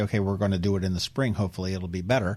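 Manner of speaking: plain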